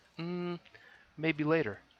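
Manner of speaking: high-pitched, dismissive brush-off tone.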